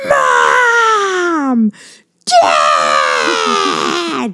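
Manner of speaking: put-on high, swooping child's yell at full volume. Parent describing how their daughter wakes them up: imitating a child yelling. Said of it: "yells at the top of her lungs".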